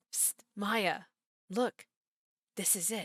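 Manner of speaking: hushed whisper. Voicing a character showing Maya something in secret: whispering. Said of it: "And why are you whispering?".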